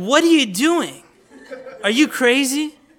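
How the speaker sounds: high, loud, shocked, outraged outburst.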